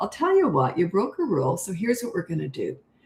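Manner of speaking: gentle, soothing, calm, sing-song tone. Showing how you would discipline a kid, in a calm disciplining tone. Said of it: "This is my tone of voice".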